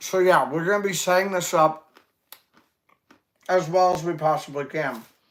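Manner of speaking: mouth full, chewing while speaking. Greeting someone and explaining the setup while eating, talking while eating. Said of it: "Excuse me eating".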